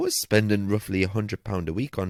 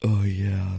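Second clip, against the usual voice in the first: put-on sultry, sexy, husky voice. Joking about working a sex line with a sore throat: put-on sultry husky voice. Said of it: "with this husky voice".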